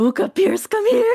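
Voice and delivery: very high, piercing, shrill scream. A player in a game calls companions Buka and Pierce over, screaming. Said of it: "I think I just screamed".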